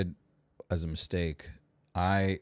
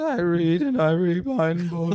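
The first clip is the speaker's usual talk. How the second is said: horrendous mocking put-on voice, higher and louder; 11 semitones higher, 7 dB louder than usual. Repeating another speaker's answer back to mock it: mocking Emily imitation, horrendous voice. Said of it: "a really horrendous voice".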